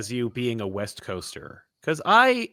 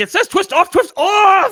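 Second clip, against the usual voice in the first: shrieking frantic scream, very loud and high; 11 dB louder than usual. Retelling a clip where he tries to twist off a cap, imitating frantic screaming. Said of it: "he's just screaming".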